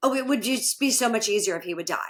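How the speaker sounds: mock tongue-in-cheek, sarcastic joking tone. Retelling what clients say about a spouse: imitating a sarcastic joking remark. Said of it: "sarcastically will jokingly say".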